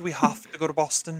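put-on British child accent. Discussing a movie scene, quoting Max: Max's British accent. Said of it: "Max dons a British accent".

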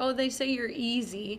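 normal talking voice

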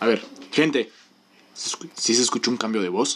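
very low, put-on serious radio-announcer voice. Testing a changed voice before a prank call: put-on somewhat serious voice. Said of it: "Voy a hacer mi voz así medio seria".

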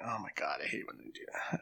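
annoyed, exasperated whisper under the breath. Voicing a priest approached after the service: annoyed eye-rolling priest. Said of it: "rolls his eyes".

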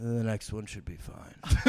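really quiet, measured, calculating, deliberate delivery. Retelling a passenger's answer about which exit to take: imitating a really quiet, calculated voice. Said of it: "Like, really quiet and, like, calculated".

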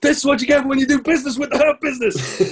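put-on, shrill, very high screaming. Retelling a wrestling match, imitating MVP screaming: imitating MVP screaming. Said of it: "M V P's like screaming at him".

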